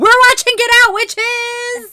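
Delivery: booming ring announcer call, very loud and high. Host announcing this week's movie, in a wrestling announcer voice. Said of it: "like a wrestler announcer".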